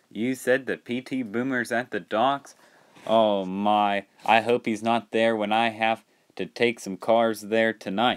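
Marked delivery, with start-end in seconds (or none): none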